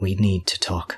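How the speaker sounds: discreet, private, confidential tone. Voicing a character who tells two others, once everyone has left: very quiet. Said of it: "he says very quietly".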